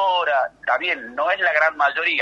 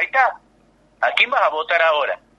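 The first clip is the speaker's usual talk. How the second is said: ordinary talk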